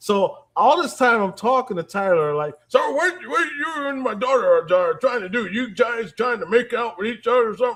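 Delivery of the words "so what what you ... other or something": put-on elderly male voice.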